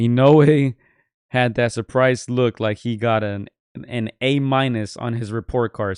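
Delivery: ordinary delivery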